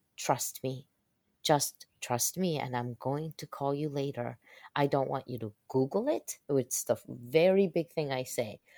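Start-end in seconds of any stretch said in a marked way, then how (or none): none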